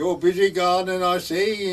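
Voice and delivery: loud put-on Welsh accent. Retelling what a man said looking over the garden wall, in his Welsh voice. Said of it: "in his Welsh voice".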